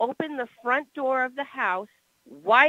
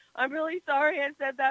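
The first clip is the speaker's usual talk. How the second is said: acted sobbing, tearful, shaky crying; 3 semitones higher, 4 dB quieter than usual. Speaker recounts going to him after he left, retelling own crying, shaking. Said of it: "I was shaking and I was crying my eyes out going".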